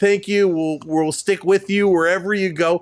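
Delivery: choked-up, catching voice, barely getting words out. Retelling thanking a hero while welling up: imitating own choked-up voice. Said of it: "welling up".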